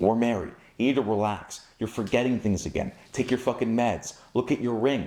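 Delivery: utterly serious, no-nonsense, deadpan delivery. Acting out telling someone they are married, in put-on dead serious tone. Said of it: "I'm dead ass serious in my delivery of this message".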